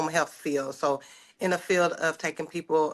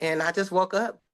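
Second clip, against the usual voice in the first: usual speaking voice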